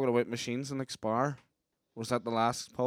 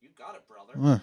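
impression, put-on preachy American voice; 7 dB louder than usual. Joking about someone who keeps saying bro: Hulk Hogan impression. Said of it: "Just do it like somebody preaches America".

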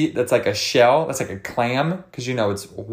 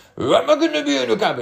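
very high-pitched attempt at a kid's accent; 11 semitones higher than usual. Quoting a kid who came over to the cabin, imitating Sebastian's accent. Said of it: "let me try to do the accent".

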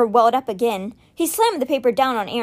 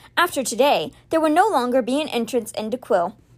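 usual speaking voice

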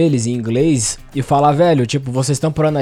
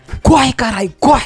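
play-acted, very high, shrill yell; 10 semitones higher than usual. Telling how you yelled and ran off with a crowd running behind you, retelling a yell. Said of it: "E eu gritei e saí correndo".

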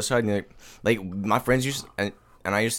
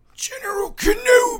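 put-on very high wheezing voice; 4 dB louder than usual. Trying once more to do the line wheezing, like General Grievous. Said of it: "how Grievous does it".

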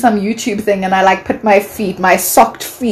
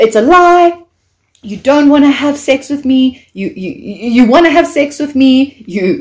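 worked-up, upset, stumbling and repeating words; 4 semitones higher than usual. Retelling accusing a stranger of wanting sex: retelling getting upset. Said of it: "I'm getting so upset".

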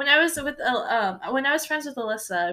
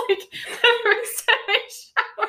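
talking through laughter, higher pitch; 10 semitones higher, 4 dB louder than usual. Telling the other speaker why their first sentence was funny: laughing while talking. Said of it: "laughing 'cause the first sentence".

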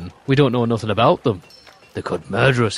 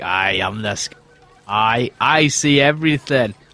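stumbling at first, then slow, deliberate scout voice. Game master voicing the scout as he turns around: Peepers voice. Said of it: "He turns around, he's like".

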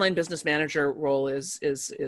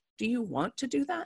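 very calm, soft, light, simple delivery; 9 semitones higher, 6 dB quieter than usual. Retelling how Leonor answers the speaker's ideas, imitating Leonor's calm voice. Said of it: "Leonor will go in this very calm voice".

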